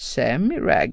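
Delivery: hushed, whispered, disbelieving, incredulous mutter. Bashir answers Rand's explanation of the situation, incredulous mutter. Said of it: "muttrade Bashir klentroget".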